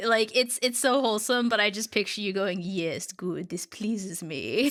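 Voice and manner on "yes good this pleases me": slow, menacing, sinister villain voice. Imagining the other speaker reacting to memes: mock-sinister voice. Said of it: "In, like, this really sinister voice".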